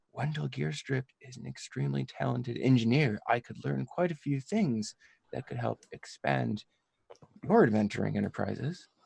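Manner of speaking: hushed, half-whispered voice. Moving over to the father and speaking into his ear, half-whispering. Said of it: "whisper to his ear".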